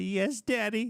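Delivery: play-acted, squeaky, very high, frightened, cowering children's voice. Acting out children who shudder in fear: imitating frightened children. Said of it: "they shudder in fear".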